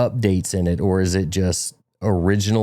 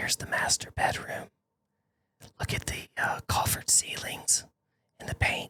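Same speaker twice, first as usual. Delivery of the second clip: very soft, breathy whisper. Imitating a girl who whispers while touring her listings: imitating someone whispering. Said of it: "She whispers".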